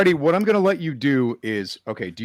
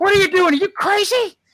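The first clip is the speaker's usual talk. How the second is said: very high, loud, frantic-sounding screaming; 5 dB louder than usual. A game narrator voices Herrick over the comm at a player, Herrick screaming. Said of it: "Herrick starts screaming at you at the comm".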